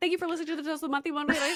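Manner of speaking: rapid, high-pitched, rattled-off delivery. Mimicking how she says her closing spiel, imitating her fast-talking sign-off. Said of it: "She says it so fast".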